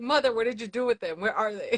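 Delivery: normal talking voice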